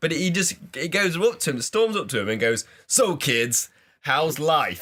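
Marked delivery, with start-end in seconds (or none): 2.9-4.8 stern, level delivery, flat intonation, no rising pitch. Retelling how the dad greets the teenagers, retelling it as a flat statement. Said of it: "he says it like in a statement way".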